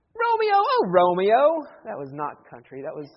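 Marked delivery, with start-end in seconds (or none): 0.2-1.7 slight British accent, high, swooping, sing-song. Speaker acts out Juliet calling from the balcony, Juliet line in slight British accent. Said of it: "I think there was a little Great Britain accent there".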